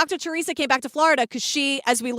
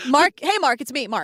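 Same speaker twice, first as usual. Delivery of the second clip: usual speaking voice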